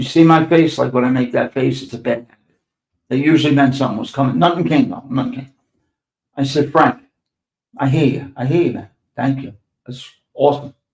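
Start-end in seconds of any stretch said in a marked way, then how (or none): 6.7-10.7 heavy, acted-out sarcasm laid on thick. Retelling his own reply to the older man: retelling a sarcastic reply. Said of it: "I was sarcastic like a motherfucker".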